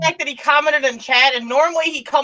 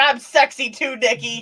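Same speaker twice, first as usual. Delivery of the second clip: normal talking voice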